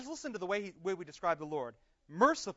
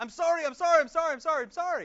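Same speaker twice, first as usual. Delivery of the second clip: put-on childlike sobbing, much higher and louder; 9 semitones higher, 9 dB louder than usual. Retelling Emma apologizing after an accident with Claire, imitating Emma sobbing.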